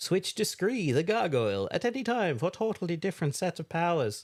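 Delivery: attempted, put-on Irish accent. Reading a game's promotional blurb aloud, in an attempted Irish accent. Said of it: "where are you getting this attempted Irish accent".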